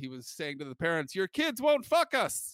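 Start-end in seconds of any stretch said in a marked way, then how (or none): 1.1-2.5 put-on Venezuelan Spanish accent on English, pitched up. Recalling Francisco's tennis-teaching routine, imitating Francisco's accent. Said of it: "in Francisco's accent".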